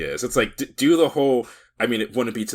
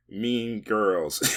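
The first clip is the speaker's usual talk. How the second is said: dry, quiet, flat deadpan, zero fanfare; 5 dB quieter than usual. A host introducing the next topic to listeners, deadpan. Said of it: "I idly like deadpan just said "Mean Girls" into my microphone".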